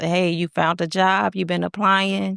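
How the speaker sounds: mock, gentle, careful, trying hard to sound nice. A wife retells asking her husband about his job search, retelling asking nicely. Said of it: "Me trying to be as nice as possible".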